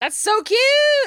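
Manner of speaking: shrill, very high, very loud excited squeal. Reacting to how something looks, apologizing afterward: excited shout.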